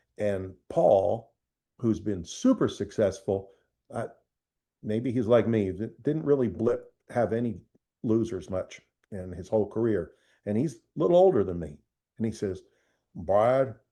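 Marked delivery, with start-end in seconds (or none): 13.2-13.7 put-on big Alabama voice. Retelling a friend's advice: imitating a friend's big alabama voice. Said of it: "he got that big Alabama voice".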